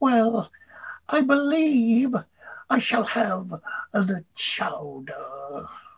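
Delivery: high, very slow character voice, every word drawn out. Retelling a voice heard from a corner booth in a diner: Winnie the Pooh voice. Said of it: "you hear this voice".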